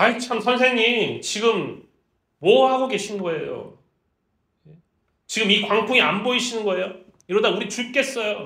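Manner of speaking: exasperated, disrespectful, despairing griping. Explaining a Gospel passage, the speaker acts out the disciples' rude, despairing complaint. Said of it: "무례하고 낙담하면서 절망적인 사람이 말하는 방식으로".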